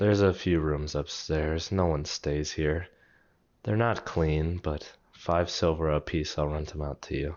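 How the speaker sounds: dreary, tired tone. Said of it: "a dreary voice".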